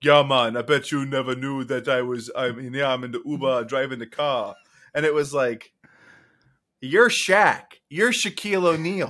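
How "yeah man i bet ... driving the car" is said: put-on Jamaican accent. Retelling Shaq disguised as an Uber driver talking to riders, Jamaican Shaq impression. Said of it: "but Jamaican Shack".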